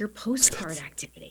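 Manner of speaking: barely audible, really low whisper. Retelling what a young woman said at a book signing: imitating a really low whisper. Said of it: "in a really low whisper".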